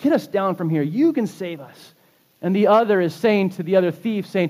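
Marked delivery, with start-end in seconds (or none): none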